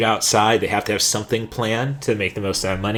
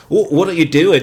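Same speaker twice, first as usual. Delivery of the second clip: put-on Scottish accent, higher and louder; 7 semitones higher, 6 dB louder than usual. Retelling how Billy Boyd called out people leaving early: imitating Billy Boyd's Scottish accent. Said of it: "Sorry if I slip into a Scottish accent".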